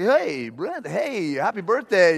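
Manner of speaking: slow, stretched-out cartoon dog voice, swooping pitch. Retelling a birthday phone message from Goofy: Goofy voice. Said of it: "Goofy... He's like".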